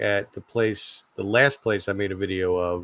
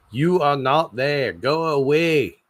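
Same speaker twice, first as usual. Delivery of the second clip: botched Australian accent drifting British, pitched up; 6 semitones higher, 4 dB louder than usual. Attempting a line in an Australian accent that comes out British. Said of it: "I can't do a Australian accent".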